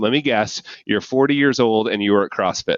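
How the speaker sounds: usual speaking voice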